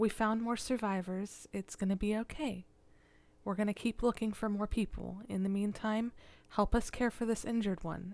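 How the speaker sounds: soft, very gentle, tender, soothing, calming tone. Voicing a character reassuring a group of survivors: soft, very gentle voice. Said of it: "a soft, very gentle".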